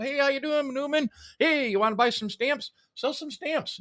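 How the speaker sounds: mailman voice pitched way up, hustling and salesy. Joking about how every mailman should act: acting as a mailman selling stamps. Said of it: "You pull up".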